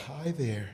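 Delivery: very quiet, soft, gentle, hushed voice. Describing learning to be softer at home: imitating own soft voice. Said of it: "my soft".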